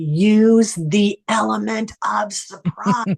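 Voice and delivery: very angry, pissed-off voice, drawn out. The speaker recalls hearing their mom's voice from the other side, imitating a very pissed-off mom. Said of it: "heard my mom's voice very pissed off".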